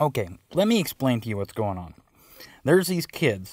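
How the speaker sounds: ordinary talk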